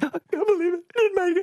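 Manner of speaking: very high, put-on, fake weeping. Retelling sitting in the gutter after being rejected at the final level, fake crying. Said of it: "fake crying because I'm crying going".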